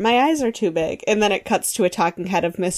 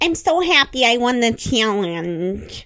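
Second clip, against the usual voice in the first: put-on slow, strong Michigan accent; 4 semitones higher than usual. Retelling what the challenge winner said: imitating Kyle's Michigan accent. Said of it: "Very Michigan".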